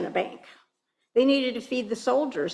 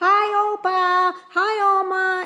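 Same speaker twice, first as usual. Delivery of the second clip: put-on very high, drawn-out children's yell; 10 semitones higher, 6 dB louder than usual. Recalling kids walking home from school greeting great-grandparents on the porch: kids yelling greetings. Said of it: "they'd all yell".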